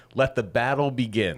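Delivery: slow, drawn-out, mock sarcastic calling out. Retelling a fishing partner's call across a pond: imitating a sarcastic shout. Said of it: "sarcastically shout from across the pond".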